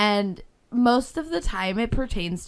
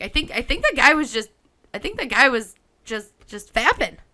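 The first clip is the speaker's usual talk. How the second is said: usual speaking voice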